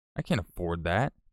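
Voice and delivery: normal talking voice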